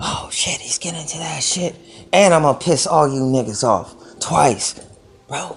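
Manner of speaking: hushed whisper throughout. Talking on a tech segment with ASMR in the morning, whispering. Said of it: "that's why I'm whispering".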